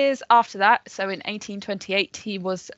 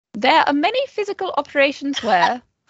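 put-on posh voice, slightly higher; 6 semitones higher, 4 dB louder than usual. Reading a quote from Florence Nightingale's Notes on Nursing, posh Florence Nightingale voice. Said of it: "explain it in a posher way than I will ... I'm degrading her by doing that voice".

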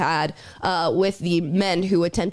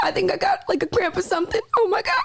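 very high, whiny, swooping fake sobbing; 14 semitones higher than usual. In a bit, LeBron tells his coach he got a cramp, mock-crying. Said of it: "why you're crying?".

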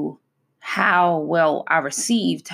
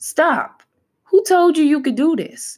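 high-pitched, scolding voice. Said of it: "it would always be me saying".

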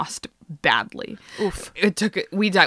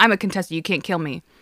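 mock bitchy, snippy tone. Retelling what they said when challenged in a card game, in a mock-bitchy tone. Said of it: "in a very bitchy fashion".

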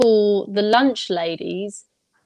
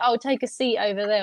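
plain

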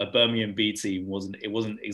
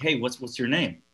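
put-on fake American accent, higher pitch; 4 semitones higher, 4 dB louder than usual. Retelling how people greeted the speaker, in a put-on american accent. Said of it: "I love your American accent already".

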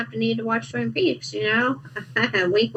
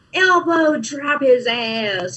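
mild, drawn-out, put-on cheering yell; 3 semitones higher than usual. Retelling watching a show, imitating own yelling at the screen. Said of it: "yelling at the screen".

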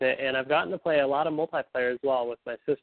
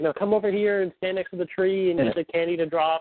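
put-on, pitched-up yelling, calling out; 6 semitones higher than usual. Retelling how mom yelled instructions during a game: imitating mom yelling. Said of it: "she's sorta yelling at me".

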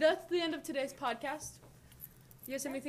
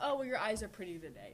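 usual speaking voice

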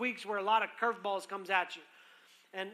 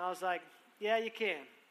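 usual speaking voice

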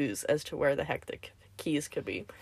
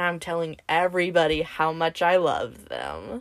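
plain

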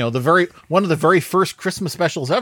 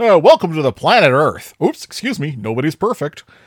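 jolly announcer voice, louder; 5 dB louder than usual. Retelling how the special opens: imitating a jolly announcer, Jim Backus. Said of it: "jolly announcer being like".

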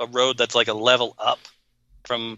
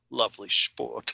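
weird, creepy, breathy whisper; 7 dB quieter than usual. Retelling a man's reply to a woman, imitating his creepy delivery. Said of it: "says this in like the weirdest, creepiest way".

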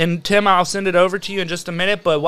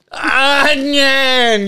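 mock furious, high, stretched-out outburst; 6 semitones higher, 4 dB louder than usual. Retelling a video where a man bites into an onion, imitating a man getting mad. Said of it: "Gets real mad".

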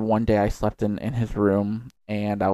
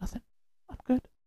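whispering, higher and quieter; 12 dB quieter than usual. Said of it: "talking like this".

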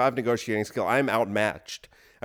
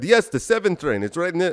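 higher-pitched fake Indian accent; 6 semitones higher, 4 dB louder than usual. Retelling a man describing an apartment near the trains, Indian accent. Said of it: "am I doing an Indian accent?".

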